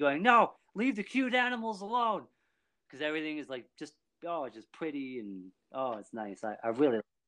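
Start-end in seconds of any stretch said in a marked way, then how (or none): 0.2-2.2 shrill, high-pitched yell, way up high. Describing a very emotional story, retell yelling at your tv. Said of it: "I'm yelling on my TV".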